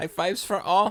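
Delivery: put-on German accent at very high pitch. Giving out high fives after a correct guess: put-on German accent. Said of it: "I was doing my little German".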